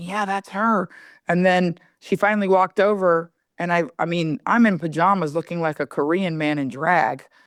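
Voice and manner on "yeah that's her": put-on hushed mutter under the breath. Retelling a woman talking to her husband: imitating muttering under her breath. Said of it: "talking to her husband under her breath".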